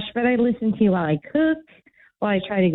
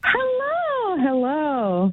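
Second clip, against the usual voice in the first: very happy, cheerful, higher pitch; 5 semitones higher than usual. Greeting the show after calling the radio station: very happy. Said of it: "why are you so happy?".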